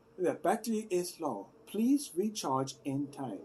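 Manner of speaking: put-on slow, careful delivery in a Chinese accent. Imitating a sound bar's warning voice: imitating a Chinese-accented device voice. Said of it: "it speaks in a Chinese accent".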